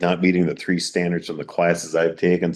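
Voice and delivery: plain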